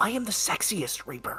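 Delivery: hushed, confiding, close leaning-in whisper. A player voicing a reaper leans close to the listener: whispering. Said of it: "and he like whispers you".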